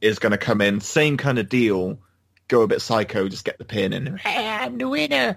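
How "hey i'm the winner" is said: put-on shrill, very high-pitched Scottish accent. Predicting the winner's reaction, imitating Nikki Cross's Scottish accent. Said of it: "is how she talks in her Scottish accent".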